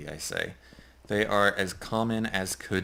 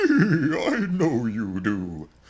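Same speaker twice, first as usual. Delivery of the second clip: put-on dead horse character voice; 5 semitones higher, 7 dB louder than usual. Speaker misses a horse buddy and voices the horse answering, horse voice. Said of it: "You're just doing a voice".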